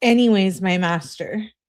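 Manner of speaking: ordinary talk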